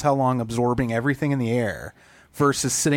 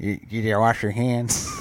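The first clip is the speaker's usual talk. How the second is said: put-on side-of-mouth voice, much lower; 2 semitones lower than usual. Imitating a man who scolded them about hand washing, imitating side-of-mouth talk. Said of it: "he talked out the side of his mouth".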